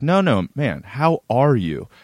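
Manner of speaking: fake-sincere, slowed delivery. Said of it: "looks him dead in the eye".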